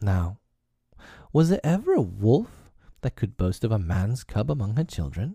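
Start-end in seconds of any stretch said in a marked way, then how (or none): none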